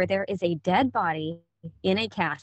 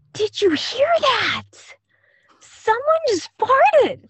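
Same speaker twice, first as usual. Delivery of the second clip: very high, loud stage whisper; 7 dB louder than usual. Retelling a child speaking at a funeral viewing: imitating a stage whisper. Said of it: "the stage whisper kind of thing".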